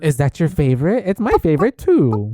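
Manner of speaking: creepy sing-song voice swooping up and down in pitch. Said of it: "He said them all very creepily".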